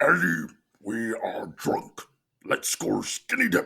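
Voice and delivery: loud, monster-like voice. Asked by the others to perform it, the speaker does a Venom impression. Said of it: "Let's hear the Venom impression".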